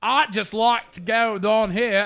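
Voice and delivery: very loud, high put-on Cockney accent. Explaining to the others what the Cockney accent is, in a Cockney accent. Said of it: "the entire Cockney accent".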